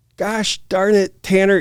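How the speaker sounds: mock, high-pitched, yelled-out screaming. Retelling how a friend stopped the complaining speaker mid-run; imitating a friend screaming. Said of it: "he starts screaming at me".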